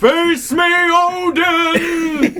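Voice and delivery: shouting. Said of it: "Just yell".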